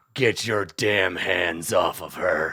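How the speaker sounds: very low-pitched, gravelly voice. Storyteller voicing a hero confronting goblins, in a gravelly Batman voice. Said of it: "he says in his graveliest Batman voice".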